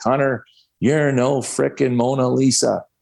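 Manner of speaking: scolding yell, mild and reined in. Recounting a mistake he made, imitating John Brophy screaming and yelling at him. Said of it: "he's screaming and yelling at me".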